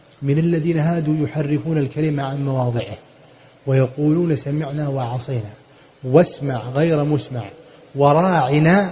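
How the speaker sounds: plain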